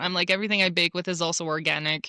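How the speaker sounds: ordinary talk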